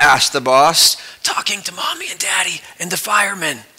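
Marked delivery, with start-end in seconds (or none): 1.2-3.6 put-on hushed, soft child's half-whisper. Telling a joke, a child answers the boss about the policeman, half-whispering. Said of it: "whispered the child".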